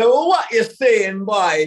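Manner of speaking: put-on loud, high-pitched Jamaican accent. Retelling a friend's greeting in a put-on Jamaican accent: imitating Sean Majumder's Jamaican accent. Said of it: "jumped into this, like, Jamaican accent".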